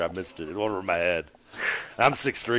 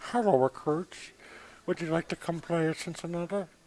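eerie, very high-pitched cartoon child voice; 9 semitones higher, 4 dB quieter than usual. Mid-banter, the speaker slips back into a creepy Bobby's World voice. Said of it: "It's still creepy as hell".

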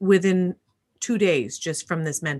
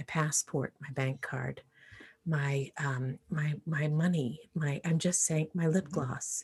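hushed whisper, much quieter; 4 semitones lower, 10 dB quieter than usual. Embarrassed, listing what her phone holds while Jennifer strains to hear: whispering. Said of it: "It's hard to hear".

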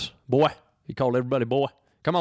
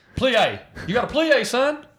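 mock yelling, coach-like shouting; 12 semitones higher than usual. Describing a football coach turned ballet teacher, imitating a yelling coach. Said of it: "he was just yelling at people".

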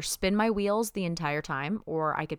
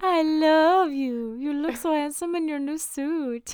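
very high, raised lovey voice; 10 semitones higher, 5 dB louder than usual. Retelling a character prank calling someone as a lover, the speaker does the prank-call lover voice. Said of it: "I feel like you were doing the voice that we did".

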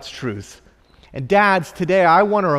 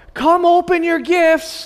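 put-on very high, eager, excited little-boy shout; 11 semitones higher than usual. Retelling how a three-year-old son yelled up the stairs: imitating a child yelling. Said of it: "he yells".

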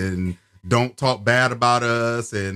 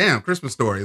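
ordinary talk, nothing marked

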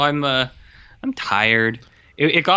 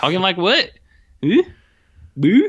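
put-on Albertan accent; 5 semitones higher, 4 dB louder than usual. Recounting being asked why they talk like that, answering in a thick Albertan accent. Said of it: "why are you talking like that?".

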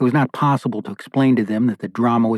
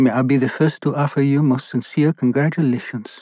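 thick, laid-on, put-on Italian accent; 2 semitones higher than usual. The wine waiter arrives with champagne to offer congratulations: fake italian accent. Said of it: "laying on the fake Italian accent".

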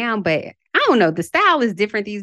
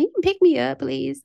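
spoiled, entitled-sounding voice pitched up high; 6 semitones higher than usual. Imagining being a millionaire asking a chauffeur for a ride: spoiled-sounding request. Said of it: "I know I sound spoiled already".

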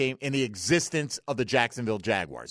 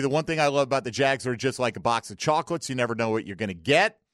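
ordinary talk, nothing marked

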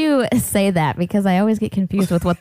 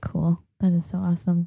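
put-on public radio announcer voice; 4 semitones lower, 5 dB quieter than usual. Reacting to news about a charity CD, in an NPR voice. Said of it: "Did you just go to your NPR voice?".

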